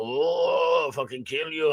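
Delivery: fake Japanese accent, drawn out, "oh" stretched. Retelling what a man in a story said, in a put-on Japanese voice. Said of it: "That's Japanese. It's so much more fun to do a Japanese voice".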